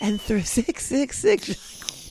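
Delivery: very slow, soft, very calm reading voice. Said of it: "reading it like this, very calm voice".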